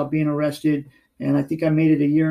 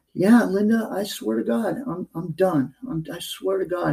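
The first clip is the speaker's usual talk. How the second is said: play-acted miserable, tearful speech through crying; 3 semitones higher than usual. Retelling his own tearful promise to stop: retelling own crying promise. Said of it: "And we're both crying".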